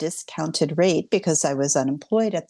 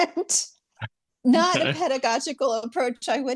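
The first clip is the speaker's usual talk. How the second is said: usual speaking voice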